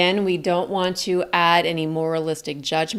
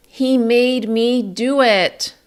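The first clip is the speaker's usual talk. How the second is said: each sound held longer, drawn out, raised, high; 5 semitones higher, 6 dB louder than usual. Demonstrating a sample statement for listeners to observe, with sustained, drawn-out sounds. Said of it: "I sustained sounds for a little bit longer".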